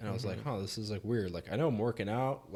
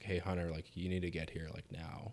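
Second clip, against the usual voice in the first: mock near-whimpering voice, much quieter; 3 semitones lower, 5 dB quieter than usual. Speaker recalls phoning dad's office, imitating dad's almost-whimpering voice. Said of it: "it's like this whimpering voice almost".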